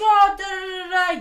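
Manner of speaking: mock high, very slow, drawn-out yelling babble. Retelling a road rage fight, imitating the other driver yelling. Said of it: "yelling at me and stuff".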